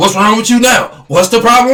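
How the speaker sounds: mock irritated, angry delivery. Speaker acting out a woman getting mad at him while he rests, imitating someone angry. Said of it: "and then she get mad".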